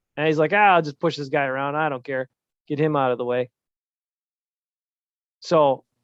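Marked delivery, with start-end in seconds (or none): none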